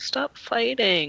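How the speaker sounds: very hushed, very quiet, high tiny voice. Cadus, hiding behind someone's legs, speaks up very, very quietly. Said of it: "says very, very quietly".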